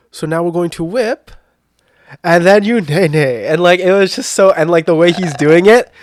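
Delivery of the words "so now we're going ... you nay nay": put-on odd old-fashioned British accent. Describing a man in a dance-class reel, doing his weird old-school british accent. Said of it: "he does this like really weird British or like very like old school accent".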